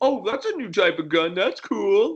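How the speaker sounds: put-on high, swooping, thoroughly sarcastic voice. A gamer describes reacting after being killed in a shooter game, retelling a sarcastic remark. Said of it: "Like sarcastically".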